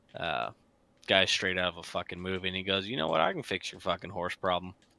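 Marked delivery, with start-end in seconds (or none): 2.9-4.8 real cowboy-style southern Texas drawl. Retelling what a coworker said about fixing the horse problem: imitating a southern texas drawl. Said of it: "he's got that real southern Texas drawl".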